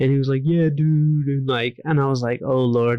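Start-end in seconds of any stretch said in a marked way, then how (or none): 0.4-1.3 put-on skateboarder dude voice. Retelling meeting a sad-looking guy, imitating him in a skateboarder dude voice. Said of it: "he talked like a skateboarder dude".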